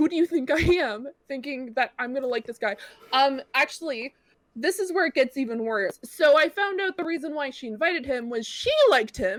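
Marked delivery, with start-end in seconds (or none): 0.0-1.1 acted angry tone, higher pitch. Retelling what was said to a friend, retelling own angry retort. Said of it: "I got really mad at her".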